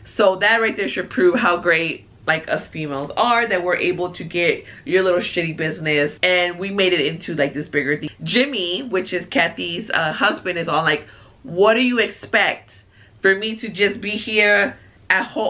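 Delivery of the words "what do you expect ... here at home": clumsy, bad put-on New Jersey accent. Retelling what a husband said to his wife, Jimmy in a bad Jersey accent. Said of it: "I'm trying to do like a Jersey accent".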